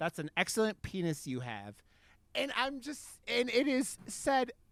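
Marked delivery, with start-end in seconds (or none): none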